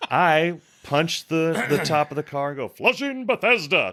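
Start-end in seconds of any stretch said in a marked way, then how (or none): 2.7-3.9 showy, high, put-on calling voice. Punching the car roof to wake a sleeping Bess, in the most Guy Good voice. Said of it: "in the like the most Guy Good voice that I can".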